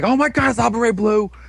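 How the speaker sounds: acted-out, very high-pitched freak-out squeal. Recounting a show's plot, the speaker acts out a character's reaction: retelling a freak-out. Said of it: "Guy freaks the fuck out".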